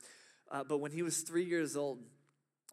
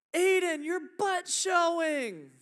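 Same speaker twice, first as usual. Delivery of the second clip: put-on very high, very loud, piercing little girl's scream; 9 dB louder than usual. Retelling how an older sister saw her little brother run out naked, imitating a girl screaming. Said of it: "she screamed out".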